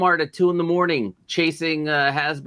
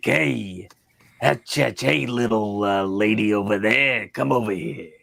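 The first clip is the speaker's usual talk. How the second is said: put-on very low, old-time vaudeville stage voice; 8 semitones lower than usual. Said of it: "he's an old vaudevillian guy".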